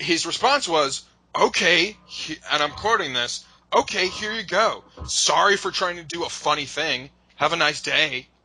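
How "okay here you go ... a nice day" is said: mock smug, snide tone, higher pitch. Quoting someone's reply to a company's request: imitating a smug douchebag tone. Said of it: "it's such a douchebag way".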